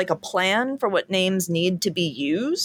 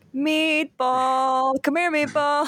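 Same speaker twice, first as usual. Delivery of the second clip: long, very slow, high, drawn-out shout; 8 semitones higher than usual. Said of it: "shouting across the dog part".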